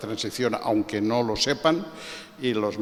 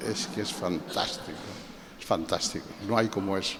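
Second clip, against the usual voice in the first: ordinary delivery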